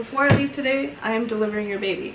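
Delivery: ordinary talk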